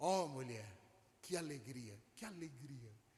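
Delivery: put-on voice full of admiration, delighted. Retelling a story where a woman is addressed as mulher, acting out an admiring tone. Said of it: "aquele tom de admiração".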